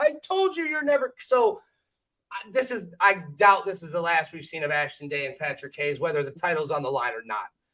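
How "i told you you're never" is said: mock crying put-on voice, higher and quieter. Retelling a wrestler's words after a brawl, imitating Patrick Hayes crying. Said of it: "we hear Patrick basically crying".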